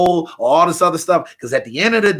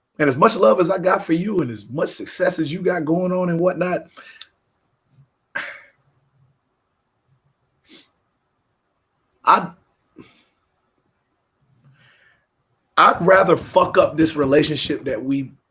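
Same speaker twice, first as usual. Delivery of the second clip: choking up, tearing up, holding back tears. Telling the other speaker how much this means to them: choking up. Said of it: "I'm choking up".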